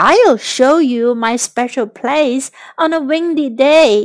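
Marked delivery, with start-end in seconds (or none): none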